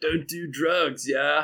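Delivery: mock surfer dude voice, slowed. Speaker recapping what Michelangelo says, in a sort of surfery voice. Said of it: "in, like, a sort of surfery voice".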